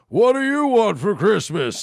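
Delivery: big TV broadcast announcer delivery. Describing playing a mall Santa asking a kid, the speaker uses a Don Pardo announcer voice. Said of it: "it's the announcer from S N L".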